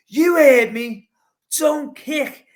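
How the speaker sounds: put-on loud, high, mad-sounding outburst in a Scouse accent. Retelling his reply to a man who challenged him, retelling a mad Scouser outburst. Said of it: "they just think we got a mad Scouser here".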